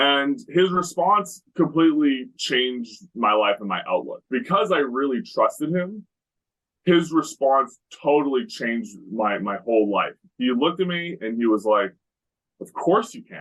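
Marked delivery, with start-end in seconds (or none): 12.6-13.4 play-acted, pitched-up, indignant, offended tone. Retelling someone's answer to a question: imitating an offended reply. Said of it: "he was offended by the question".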